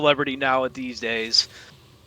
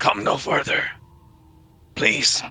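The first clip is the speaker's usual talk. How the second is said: rasping, scraped-out, raspy voice; 4 dB quieter than usual. Game master voicing an individual in the Duat, in a raspy voice. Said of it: "hear a raspy voice say".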